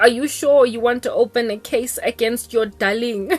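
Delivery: ordinary delivery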